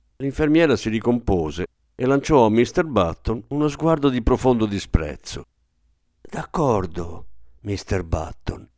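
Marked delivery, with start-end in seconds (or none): 6.2-8.6 low, conciliatory, placating whisper. A nurse answers a man demanding to see his son, in a conciliatory whisper. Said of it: "Bisbigliò conciliante".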